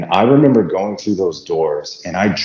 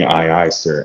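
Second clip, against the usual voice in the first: ordinary talk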